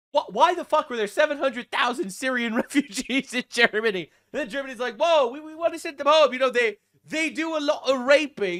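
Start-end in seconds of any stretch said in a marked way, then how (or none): 4.9-8.6 put-on British accent slipping in. Speaker voicing Germany's reaction to a headline, in a put-on British accent. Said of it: "that's the British accent".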